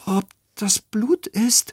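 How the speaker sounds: faintly quavering voice. Narrating a story, Emil asks after the others spot red stains: voice trembling slightly. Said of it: "Emils Stimme zittert ein wenig".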